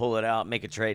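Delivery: ordinary delivery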